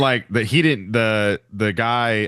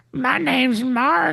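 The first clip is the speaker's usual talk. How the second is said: mock slow southern drawl, higher pitched. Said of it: "they start that slow".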